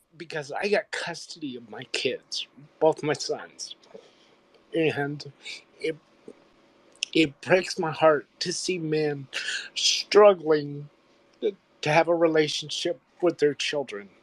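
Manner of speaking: crying through words, tearful, voice breaking. Speaker tells the group about getting custody of his sons, crying. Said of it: "I don't know why I'm crying".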